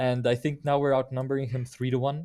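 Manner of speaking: ordinary talk, nothing marked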